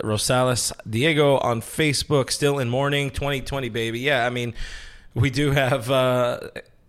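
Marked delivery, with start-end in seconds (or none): none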